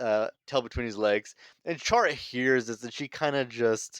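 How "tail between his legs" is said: normal talking voice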